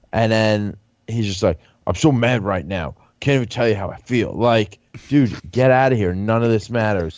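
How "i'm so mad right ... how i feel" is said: exaggeratedly dramatic put-on delivery. Mocking a show contestant's overly dramatic way of talking: imitating Nelson's dramatic speech. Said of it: "he's super dramatic".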